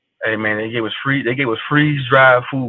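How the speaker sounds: ordinary talk, nothing marked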